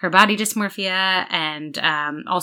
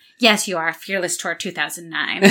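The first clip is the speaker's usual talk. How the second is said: mock deadpan delivery. Quoting a favorite line where Kimber's husband answers her, imitating a deadpan reply. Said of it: "Only to have her husband deadpan".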